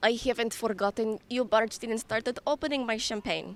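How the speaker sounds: put-on Eastern European accent. Performing a line from the play for a listener, in an Eastern European accent. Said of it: "it's like an Eastern European".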